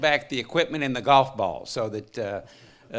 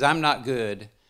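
ordinary delivery

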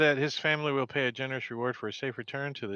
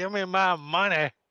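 deliberate, slow, pitched-up, insistent in-character voice; 5 semitones higher, 4 dB louder than usual. Voicing the druid demanding money from the captive: druid demanding money. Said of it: "the druid's like".

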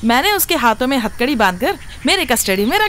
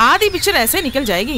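ordinary delivery, nothing marked

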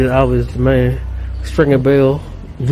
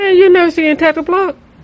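voice jumping to very high pitch; 3 dB louder than usual. Asking a friend if they've never seen a film: voice going high. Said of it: "his voice went high".

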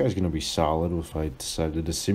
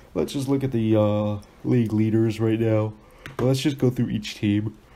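speaking through a yawn; 5 semitones higher, 4 dB louder than usual. Going through league standings late at night, yawning while talking. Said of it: "Sorry, I'm yawning".

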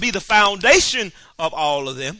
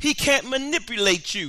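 usual speaking voice

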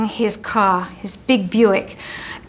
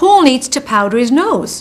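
put-on thick, heavy Liverpool Scouse accent; 3 semitones higher, 4 dB louder than usual. Quoting what a young man who came up said: thick Liverpudlian accent. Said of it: "said in a thick Liverpudlian accent".

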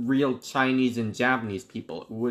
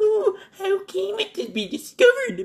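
put-on mocking voice, pitched much higher; 5 dB louder than usual. Imagining a man writing down objections in his manuscripts, imitating a mocking voice. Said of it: "writing down the objections in a mocking voice".

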